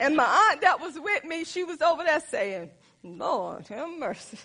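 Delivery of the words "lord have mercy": mock under-the-breath mutter, lower and slower. Retelling what her aunt said beside her; imitating aunt under her breath. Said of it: "have mercy under her breath".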